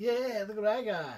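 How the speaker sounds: high-pitched gloating taunt. Telling a friend about a man ripping a ball from a kid, imitating the ball snatcher. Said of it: "turns around like".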